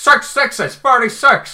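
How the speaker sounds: aggressive, forceful delivery. Retelling a taxi driver's reply about the fare: imitating an aggressive outburst. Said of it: "Really aggressive then".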